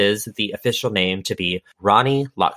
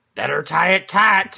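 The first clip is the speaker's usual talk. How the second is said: mock very loud, bold, rough, pitched-up ceremonial call; 9 semitones higher than usual. Telling how a bride and groom were tied together: retelling a very loud line. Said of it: "very loudly says".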